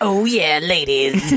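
put-on demon voice. Joking with friends about how Krampus has always sounded in their head: Krampus voice. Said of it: "that's what Krampus has always sounded".

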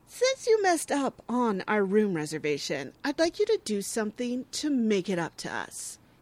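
put-on, mocking, entitled tone. Recapping what he demanded about the room reservation, mocking his shitty, entitled tone. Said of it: "the way he says it is just so shitty and entitled".

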